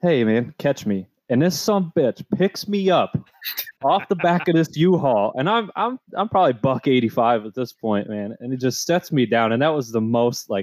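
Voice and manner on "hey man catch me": playful, joking delivery. Recalling calling down to Mason from the back of a U-Haul, retelling a joking call. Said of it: "I just jokingly".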